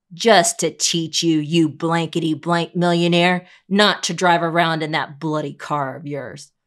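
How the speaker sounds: intimidating, menacing, threatening voice. Narrator reading a voice in the dark answering the reporter, menacing voice. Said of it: "A menacing voice replies".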